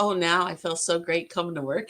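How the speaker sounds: ordinary talk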